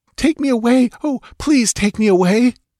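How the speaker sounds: very high, hysterical, gasping voice. Reading Muriela's plea as she throws her arms around Conan: gasping hysterically. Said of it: "she gasped hysterically".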